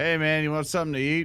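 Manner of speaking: relaxed, easygoing, laid-back, casual, chill tone. Voicing a character leaning in to offer food: Lex in character. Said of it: "Lex leans in and goes".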